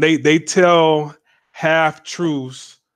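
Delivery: slow, drawn-out repetition.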